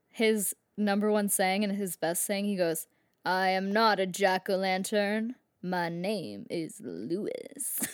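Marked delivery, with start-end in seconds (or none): 3.2-7.8 very slow, drawn-out character voice, word by word. Imitating a talking jack-o-lantern's best saying, Lewis the jack-o-lantern impression. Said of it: "I'm gonna try to do an impression".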